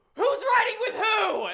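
mock shouting. Retelling trying to organize rides at the arcade: imitating her own past shouting. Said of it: "shouting in the room".

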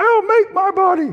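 put-on very high little-boy falsetto. Storyteller retells a little boy's reply: imitating a boy's high falsetto. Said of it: "His high little falsetto voice".

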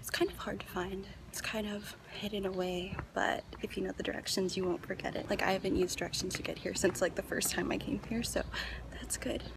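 very quiet, hushed speech. Filming on a really quiet street, talking to the camera: talking really quietly. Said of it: "I'm talking really quietly".

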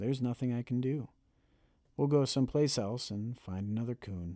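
plain reading voice

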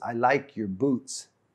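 whispered voice. Retelling a quiet moment in a speaker's room: imitating Kenneth Copeland whispering. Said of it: "Brother Copeland whispered to me".

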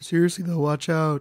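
dry, expressionless announcer delivery. Retelling the announcer warning people away from the waves: imitating a deadpan announcer. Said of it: "the most deadpan person on the planet".

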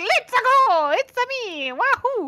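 gung-ho cheering, high-pitched, each cheer drawn out. Describing how the character talks, imitating him: gung-ho Mario voice. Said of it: "everything he says is very gung-ho".

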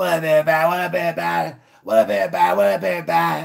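mascot-style voice. Mocking someone's greeting by making it sound like Grimace: Grimace-like voice. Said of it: "Don't it sound like Grimace?".

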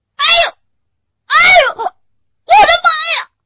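very high, very loud, short pained yelps. Narrator reads a man crying out like someone scalded by fire: short pained cries. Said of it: "像是往常人们被火烫着时发出的短促的喊叫声一样".

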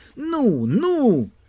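shrill, high, impatient, frustrated shouting. Narrator reads a character coaxing fish to take the worm, shouting. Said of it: "вже закричав Василько".

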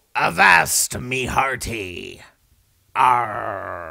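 talking like a pirate. Performer about to go on live on Talk Like a Pirate Day, pirate voice. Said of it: "It's Talk Like a Pirate Day".

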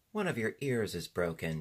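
ordinary delivery

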